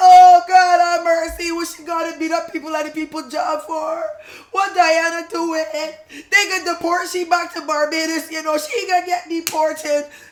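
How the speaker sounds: tearful, crying, lamenting voice. Retelling how Dad reacted to bad news: imitating Dad crying. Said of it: "Dad starts crying now".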